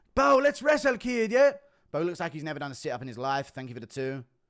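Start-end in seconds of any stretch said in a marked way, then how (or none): 0.2-1.6 very loud, high-pitched yell. Doing Conor McGregor calling out Bo: Conor McGregor impression. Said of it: "Impression of Conor McGregor calling out Bo".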